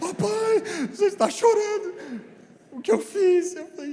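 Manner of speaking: put-on very high, loud, desperate crying child's wail. Retelling a son's words on seeing his father cry: imitating Rafael crying desperately. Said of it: "ele começou a chorar desesperadamente".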